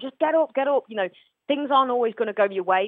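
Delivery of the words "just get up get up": play-acted, high-pitched shouting scream. Retelling screaming at a player from a seat at the ground: imitating own screaming. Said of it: "screaming at him".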